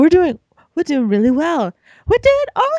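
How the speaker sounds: put-on high-pitched squeak.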